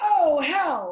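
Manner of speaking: loud, stressed yelling. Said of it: "they yell".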